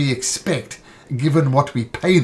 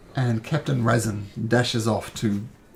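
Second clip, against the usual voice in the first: ordinary delivery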